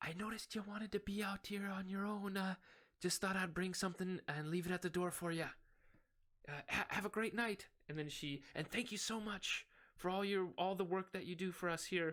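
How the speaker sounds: hushed whisper. In a game scene, the tavern lady speaks through the door to the player: whispering. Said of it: "she whispers".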